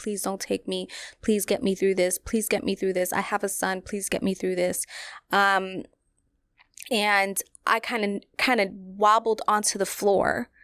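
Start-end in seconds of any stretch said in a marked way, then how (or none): 0.0-4.8 urgent, imploring, desperate pleading tone. Retelling praying in the hospital waiting room: retelling a desperate prayer. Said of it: "I'm just praying to God".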